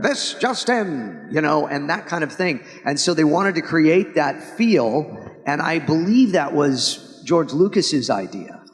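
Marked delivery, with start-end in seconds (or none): 0.0-1.3 pitched-up, vintage newsreel announcer voice. Imitating the narrator's episode opening: old newsreel announcer voice. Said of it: "it was supposed to be like the old news".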